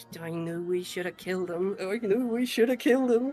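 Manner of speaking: whispered under breath. Gary reacts to a wanted notice, whispered under breath. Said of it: "whisper under his breath".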